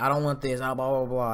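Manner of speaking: normal talking voice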